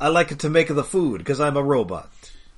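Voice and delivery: imitated Italian accent. Quoting a robot character's line in a put-on Italian accent. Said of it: "he's got like an Italian accent".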